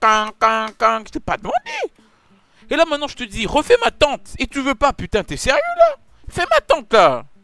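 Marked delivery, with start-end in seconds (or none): 0.0-1.0 mock heavy, thick Cameroonian accent. Mocking how the other speaker did the accent: imitating a heavy Cameroonian accent. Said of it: "Comment tu fais un gros accent camerounais là ?".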